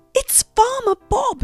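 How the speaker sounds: gasped out. Narrator reading a character hearing someone approach: gasping. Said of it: "she gasped".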